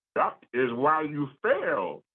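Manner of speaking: wise alien master voice with swooping pitch. Responding to a point about not setting a player up to succeed: Yoda impression. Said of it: "I'm going to give you my best Yoda impersonation".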